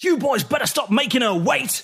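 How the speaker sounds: calling out, very high. Voicing Greg Flashman calling out from the bowels of the ship: calling out. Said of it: "You hear him call out from the bowels of the ship".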